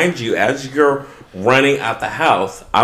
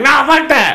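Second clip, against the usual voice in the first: very high, shouted, dismissive brush-off; 13 semitones higher, 3 dB louder than usual. Retelling the other's refusal to come inside: imitating someone yelling back. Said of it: "You're yelling at me like".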